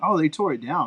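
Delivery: mock casual, nonchalant, offhand delivery. Retelling what dad said about the old mall: imitating a nonchalant reply. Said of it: "So nonchalantly".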